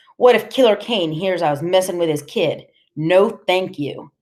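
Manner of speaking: ordinary delivery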